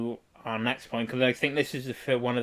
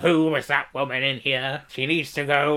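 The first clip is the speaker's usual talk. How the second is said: put-on lecherous dirty old man character voice; 3 semitones higher, 4 dB louder than usual. Retelling a story, a man asks about the woman who bit him, dirty old man voice. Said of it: "It's the dirty old man voice".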